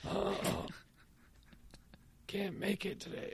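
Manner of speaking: put-on raspy sick voice. Giving voice to a dog described as sick: mock-sick raspy voice. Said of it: "with a real raspy".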